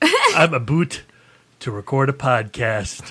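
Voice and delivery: swooping, exaggerated, hammed-up Canadian accent. Podcast intro quote, exaggerated Canadian accent as Hugh Jackman. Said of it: "I thought my impression of Hugh Jackman as a Canadian was spot on".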